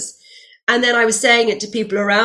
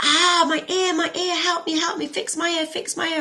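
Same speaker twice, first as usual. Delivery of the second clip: mock screaming, higher pitch, slower pace; 8 semitones higher, 5 dB quieter than usual. Retelling how a woman fell on the street and cried out, imitating someone screaming. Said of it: "starts screaming".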